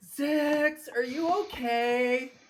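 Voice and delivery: very high, very loud, shrill full-lung scream. A player's character calls out to a companion, screaming at the top of lungs. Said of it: "scream at the top of his lungs".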